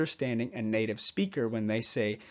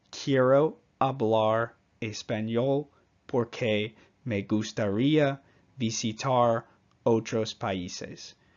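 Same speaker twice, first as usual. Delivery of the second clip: Spanish spoken with English accent and pronunciation. Showing how a Spanish phrase sounds with English pronunciation: English accent on Spanish. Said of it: "if I applied my English brain, my English pronunciation to this particular phrase".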